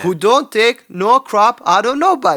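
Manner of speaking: Jamaican accent impression. Quoting a teammate's pep talk from a movie bathroom scene: imitating a Jamaican movie character. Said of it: "you do do a really good impression of that".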